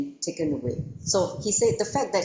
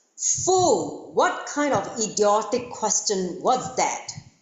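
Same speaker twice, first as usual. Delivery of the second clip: haughty, scornful, arrogant anger; 3 semitones higher than usual. Storyteller voicing the master answering the king's question, a big angry arrogant shout. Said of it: "in that big, angry voice".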